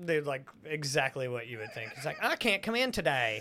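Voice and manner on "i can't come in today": high, exaggerated put-on southern AI drawl. Describing a super southern AI voice to the other speaker, giving an example line. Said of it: "super fucking southern one".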